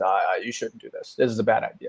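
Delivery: murmured, sneaky gremlin voice.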